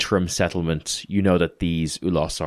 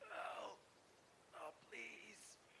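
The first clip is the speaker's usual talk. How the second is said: half-dying man's dry, broken, cracked, breathy whisper; 33 dB quieter than usual. A half-dying man begins calling out to you, cracked, parched dying voice. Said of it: "Barely able to breathe, voice cracked and parched".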